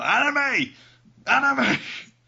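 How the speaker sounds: very high, loud, drawn-out angry shout. Retelling how an angry woman called her child across a store: imitating an angry woman shouting. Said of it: "she was just shouting across the store".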